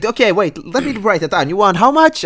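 mock eagerness, very high pitch, loud.

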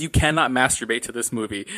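ordinary talk

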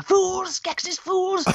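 very high, berating cry, pitched way up. Recalling the scene where Aughra rips into the Skeksis: Aughra ripping into someone. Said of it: "the scene where she rips the Skeksis a new one".

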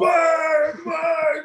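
high, taunting shout. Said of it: "and he's like".

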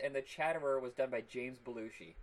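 ordinary delivery

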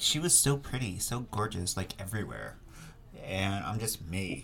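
put-on soft, gushing, swooping, sing-song valley girl voice. You act out how Kyle talks about another woman's beauty, doing Kyle as a valley girl. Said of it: "Are you making Kyle sound like a valley girl?".

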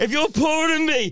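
high, loud, shouty, mocking voice. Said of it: "He's just literally gone".

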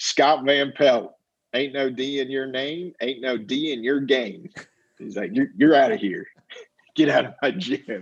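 put-on Southern drawl. Retelling what a college coach told a walk-on at tryouts: Southern drawl. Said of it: "real Southern drawl to him".

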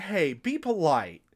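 stern, firm, scolding tone. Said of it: "she scolds him to be polite".

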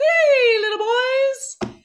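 very high, squeaky, bright cartoon voice. Explaining pure head voice versus mixed voice, Mickey Mouse voice. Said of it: "think of how Mickey Mouse sounds".

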